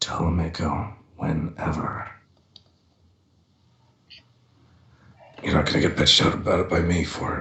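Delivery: quiet whisper. Voicing Cross leaning over to J D: whispering in character. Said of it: "leans over to J D and whispers".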